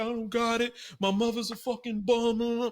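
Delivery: put-on crying, high, tearful, weepy lamenting tone. Retelling what she said about a doctor bill: imitating someone crying. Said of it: "She's crying".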